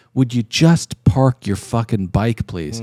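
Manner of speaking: put-on passive-aggressive pleading tone. Retelling what he said to a man slowly parking a loud motorcycle: imitating a passive-aggressive request. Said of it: "like a passive-aggressive coward".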